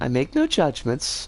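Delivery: low pitch, falling tune on "no judgments".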